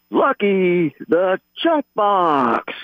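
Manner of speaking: boxing ring announcer voice, pitched high. On a show, a host announces a suggested nickname like a ring announcer. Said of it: "Like a ring announcer".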